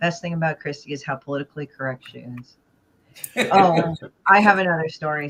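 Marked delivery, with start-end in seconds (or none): 0.0-2.6 bland, dull, dead-flat monotone. Imagining Comic Journey reading the line aloud, in the blandest voice ever. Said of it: "saying that in the most bland voice ever".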